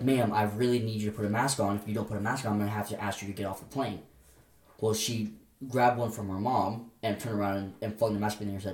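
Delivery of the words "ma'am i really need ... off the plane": normal talking voice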